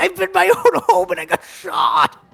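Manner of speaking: panicked, alarmed crying out. Voicing a villager who walks out of his home. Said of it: "He goes".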